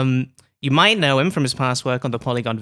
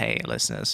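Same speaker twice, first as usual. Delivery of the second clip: exaggerated gravelly, breathy voice laid on thick; 8 dB quieter than usual. Greeting the listeners while sick, leaning into it: exaggerated gravelly voice. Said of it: "maybe I can lean into this".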